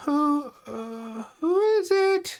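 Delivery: very high, feeble, frail woman's voice. Telling a story, voicing the woman who answers a knock at the door, imitating a very frail female voice. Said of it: "you hear this very frail female voice going".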